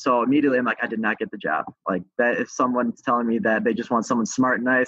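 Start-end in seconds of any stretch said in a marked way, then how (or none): none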